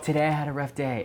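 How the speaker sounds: soft, mocking influencer-style delivery. Pitching a comedy bit that makes fun of influencers, in a soft mock-influencer voice. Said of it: "I could do like that soft voice making fun of like the".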